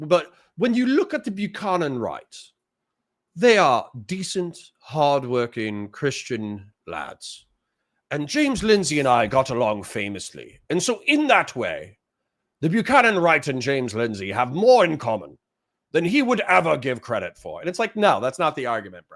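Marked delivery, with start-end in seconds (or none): 0.6-17.6 poor, unconvincing put-on British accent. Quoting a man they disagree with, in a bad British accent. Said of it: "I don't have a good British accent".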